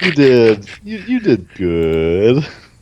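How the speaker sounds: condescending, slow, sing-song, drawing out "good". Asked to repeat the line more condescendingly, the speaker does it: condescending tone. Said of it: "say that with more of a condescending attitude".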